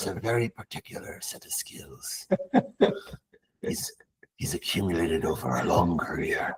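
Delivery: breathy, barely whispered, glamorous movie-star voice. Speaker slips into an impression and the others urge them to keep it: Liam Neeson impression. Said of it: "Please keep Liam Neeson".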